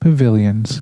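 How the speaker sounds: plain reading voice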